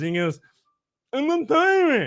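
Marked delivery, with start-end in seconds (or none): 1.1-2.1 put-on mimicked little boy's speech, much higher. Telling a trick-or-treat story, the speaker quotes the boy's answer, imitating the little boy's speech. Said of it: "he kind of talks like this".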